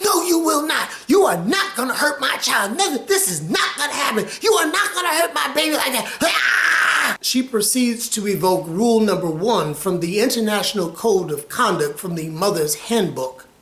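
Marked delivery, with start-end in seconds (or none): 0.0-6.2 fast, high-pitched, furious angry tirade. Speaker retells their mother confronting someone over hurting her child, imitating mother going off. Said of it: "My mother goes off".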